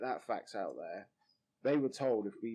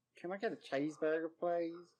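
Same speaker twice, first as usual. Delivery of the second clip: terrible put-on American accent, pitched up; 7 semitones higher than usual. Showing how Americans normally say it, in a put-on American accent. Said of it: "Something like that. It's terrible".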